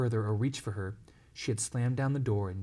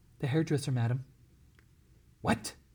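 ordinary delivery, nothing marked

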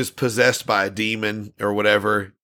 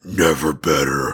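put-on demonic voice, much lower; 7 semitones lower than usual. Retelling a movie's ending, where a character answers a question in a demon voice. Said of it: "in that demon voice or whatever".

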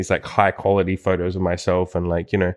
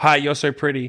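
play-acted, high, nervous word-vomit blurt; 7 semitones higher than usual. Retelling what she blurts out right after a hug, imitating nervous blurting. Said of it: "she just blurts out like nervously".

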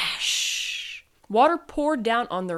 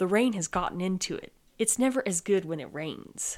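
usual speaking voice

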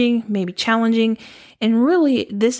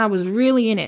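ordinary talk

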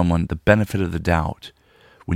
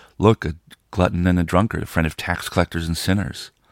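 ordinary talk, nothing marked

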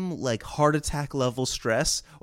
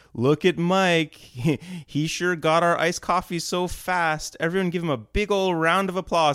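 mock, sarcastic tone; 4 semitones higher than usual. Retelling how a director praised a late coffee run: imitating a sarcastic director. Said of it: "giving me this sarcastic applause".

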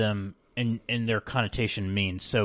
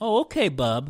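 condescending, patronizing, superior brush-off tone; 4 semitones higher than usual. Showing how people used the word bub: imitating a condescending tone. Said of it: "used almost in a condescending way".

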